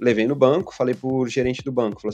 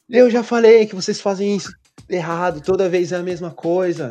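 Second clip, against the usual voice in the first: play-acted full-on angry yelling, high and loud; 7 semitones higher, 5 dB louder than usual. Recounting a woman who slammed her hands on the desk, retelling her shouting. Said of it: "gritando, gritando".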